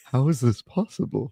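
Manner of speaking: put-on frail old man voice. Imagining a friend in a wheelchair greeting someone: withered old man voice. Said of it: "he's, like, really withered, and he looks at you and he goes".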